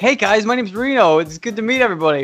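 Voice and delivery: high, loud, play-acted eager and thrilled voice. Retelling a wrestler's first day at WWE greeting everyone, imitating an excited greeting. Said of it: "He's so excited".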